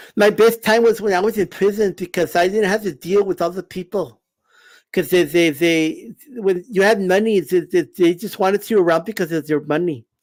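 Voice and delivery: speaking with a lisp. After explaining how he does the voice, the speaker talks as Mike Tyson. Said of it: "how do I talk that way?".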